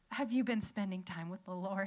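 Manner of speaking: careful, wary, hesitant, tentative tone. Retelling how a husband checks in with a worried question: imitating a hesitant question. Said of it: "really hesitant".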